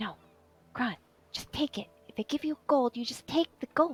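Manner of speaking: small voice. Telling a scene, a voice next to him speaks up: small voice. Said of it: "you would hear a small voice".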